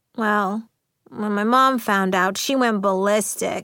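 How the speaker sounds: ordinary delivery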